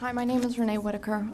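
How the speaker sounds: soft, quick, too quiet speech. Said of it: "just speak up a little louder".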